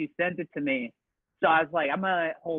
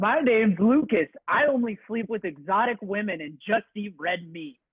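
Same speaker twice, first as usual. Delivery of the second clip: put-on American-sounding delivery; 4 semitones higher, 4 dB louder than usual. Doing a joke impression of Lucas: impression of Lucas. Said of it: "this is my impression of Lucas".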